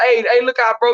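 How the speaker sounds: usual speaking voice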